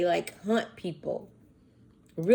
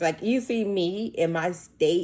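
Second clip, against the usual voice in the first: ordinary talk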